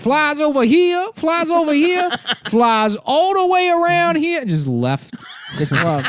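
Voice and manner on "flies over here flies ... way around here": very high-pitched comic stage patter voice. Retelling a comedian's stage bit with the microphone: imitating Fubu doing his bit. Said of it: "He's like".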